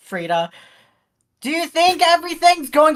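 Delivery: shouting. Speaking in character while still deafened, asking a question: shouting. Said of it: "why am I shouting?".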